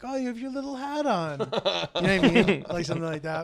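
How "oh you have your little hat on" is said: high, silly, playful, joking teasing. Retelling what Hillary says when she comes home, imitating Hillary's playful teasing. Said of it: "a playful, silly, like, jokingly ripping on me way".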